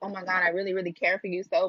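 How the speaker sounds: mock fake-caring tone, put-on concern. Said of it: "play the role of".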